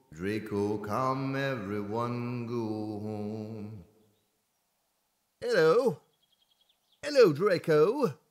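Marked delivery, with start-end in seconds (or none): 5.4-8.2 put-on clumsy, unconvincing British accent, pitched up. Greeting draco in the game: bad british accent. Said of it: "I can't do a good British accent".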